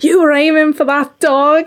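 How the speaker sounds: play-acted angry shrieking, screaming tirade. Retelling how a lady with a dog screamed at her: imitating a lady screaming. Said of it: "She started absolutely screaming at me".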